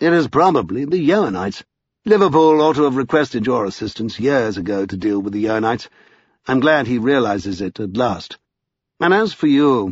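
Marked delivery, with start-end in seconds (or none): none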